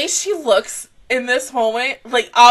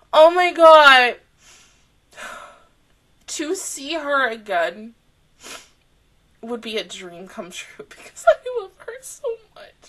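crying while talking, tearful and weepy. Speaker who misses someone dearly, crying while talking. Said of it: "I don't even know why I'm crying".

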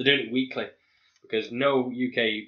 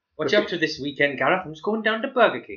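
fake Welsh accent, much higher; 4 semitones higher, 4 dB louder than usual. Teasing a Welsh speaker about Swansea Burger Kings; bad Welsh accent. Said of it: "that's worse than mine".

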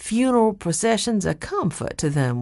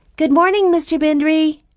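very high, loud, friendliest call; 11 semitones higher, 6 dB louder than usual. Narrator reads a girl greeting a man in the courtyard: friendliest voice, calling out. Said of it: "in her friendliest voice".

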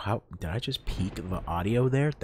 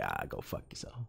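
whispered, breathy, dismissive New York accent; 13 dB quieter than usual. Showing how he'd say a rude emote line: New Yorker manner. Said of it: "My old, my New Yorker ways".

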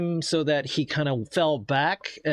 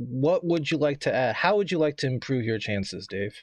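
plain

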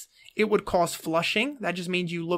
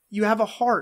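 usual speaking voice

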